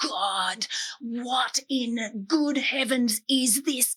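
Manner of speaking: angry, exasperated outburst. Recalling being furious in a ploughed paddock, the speaker retells a scream. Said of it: "I just started screaming".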